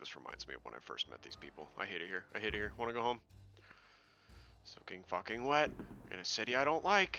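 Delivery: hushed, low mumbling and muttering under the breath. Player's character walking away from the group, muttering under his breath. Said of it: "He mutters under his breath as he's walking away".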